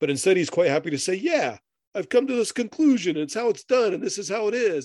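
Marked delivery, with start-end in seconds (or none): 1.1-4.9 put-on sudden New York accent, pitched up. Speaker quoting another man's conclusion: unplanned new york accent. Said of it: "I don't know why I went into a New York accent there".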